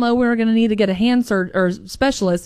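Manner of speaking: normal talking voice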